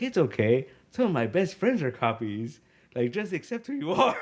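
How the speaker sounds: flamboyant little robot voice, swooping sing-song. Retelling a cartoon scene, quoting a flamboyant little robot: high-pitched flamboyant robot voice. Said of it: "a real, like, high-pitched voice".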